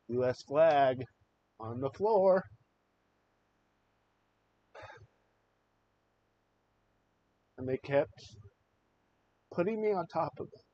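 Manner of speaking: voice choked up and choking with emotion. Recalling a military interrogation, choked up. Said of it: "I get choked up again".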